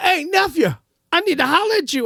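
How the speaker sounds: projected call.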